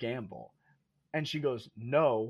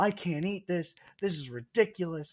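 put-on screaming, pitched up, each word dragged; 5 semitones higher than usual. Retelling a date's complaint to a waitress, imitating someone screaming. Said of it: "screaming at this girl".

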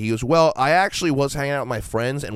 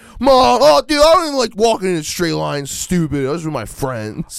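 put-on high, raised seventeen-year-old boy voice; 8 semitones higher, 7 dB louder than usual. Imitating drivers pulled over for a DUI: teenage boy talking to his mom. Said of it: "seventeen-year-old boys talking to their mom".

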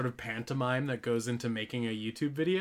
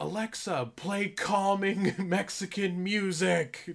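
high, jokey pretend shout; 7 semitones higher than usual. Retelling a joke they used to shout, mock shouting. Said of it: "I would just shout like".

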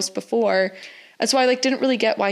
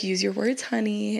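put-on attractive male voice, quieter; 5 dB quieter than usual. Acting out a book character's line to a co-host: imitating Wrath's attractive delivery. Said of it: "he says it in such an attractive manner".

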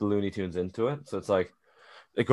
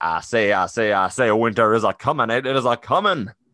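put-on cartoon rooster voice; 5 dB louder than usual. Describing the cartoon rooster riding a dragon in Westeros: Foghorn Leghorn voice. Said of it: "They gotta go get Foghorn Leghorn".

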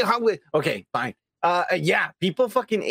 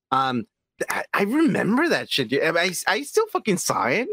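ordinary talk, nothing marked

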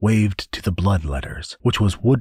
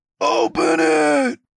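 very shrill, very high, raspy, rough yell. Narrator reads a dog in a crowd shouting at an angel, shouting. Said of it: "someone shouted from the crowd of dogs".

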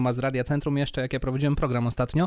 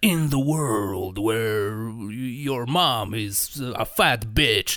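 deep, epic movie-trailer announcer voice; 4 semitones lower than usual. Warning against faking a voice on radio, imitating the movie trailer voice guy. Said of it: "Jak ten koleś w trailerach wszystkich filmów".

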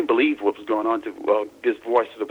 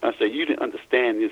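plain

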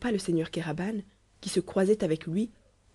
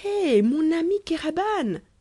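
very high-pitched, exclaimed calling-out cry; 9 semitones higher, 4 dB louder than usual. Narrator reads Van Mitten hailing his friend Kéraban, crying out. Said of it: "S'écria-t-il".

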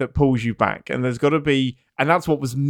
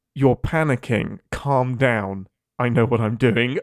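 put-on calm, patronizing, condescending tone. Retelling her reply to someone screaming at her: imitating a calm, patronizing tone. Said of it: "she is so calm and says the most patronizing thing".

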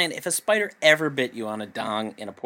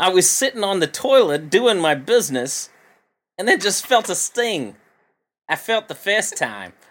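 attempted, put-on Australian accent, pitched up; 7 semitones higher, 5 dB louder than usual. Retelling a man's story of a sting on the toilet: put-on Australian accent. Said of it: "I don't know if I can do an Australian accent".

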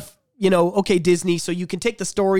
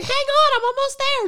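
put-on high-pitched small-girl voice. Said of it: "That sounds like Carrie Fisher to me".

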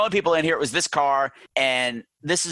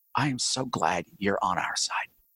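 mock, utterly earnest, heartfelt, sincere delivery; 7 semitones lower, 6 dB quieter than usual. Retelling a character's line from a horror movie: imitating Karen's most earnest voice. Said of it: "In the most earnest voice".

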